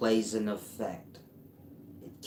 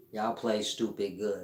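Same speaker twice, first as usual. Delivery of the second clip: ordinary delivery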